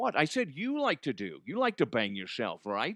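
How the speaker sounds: animated, hammy put-on voice with wide swooping pitch. Showing a favourite impression: Sean Connery impression. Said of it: "Connery's always funny".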